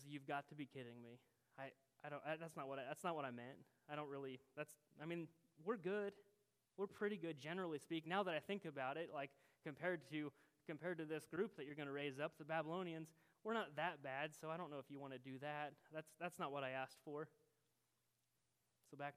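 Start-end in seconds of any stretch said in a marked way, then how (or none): none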